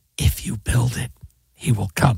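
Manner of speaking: forceful whisper. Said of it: "Can you stand up and do it?".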